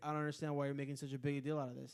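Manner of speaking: mimicked flat monotone voice. Retelling a man who wouldn't leave the speaker's seat: imitating his monotone. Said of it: "He was so monotone".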